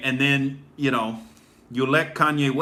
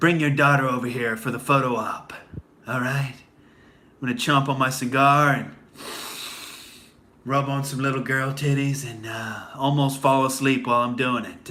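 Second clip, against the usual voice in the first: unconvincing put-on tough-guy growl. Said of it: "trying desperately to be Clint Eastwood and failing".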